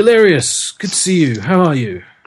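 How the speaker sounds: high voice, called out loudly across a distance. Narrating a game, voicing the commander as he spots a player's character, shouting a greeting. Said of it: "he shouts out and he greets you".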